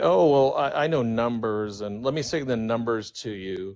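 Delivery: ordinary talk, nothing marked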